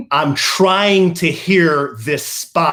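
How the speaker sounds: slow, irritated, annoyed, put-out tone. Retelling what Kelly said while the radio was on: imitating Kelly's annoyed voice. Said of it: "in that kind of voice".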